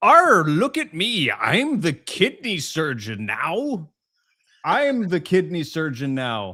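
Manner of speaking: feeble pirate voice, very weak, slow and drawn out. Reading out a listener's message: weak pirate voice. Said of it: "my pirate is very weak".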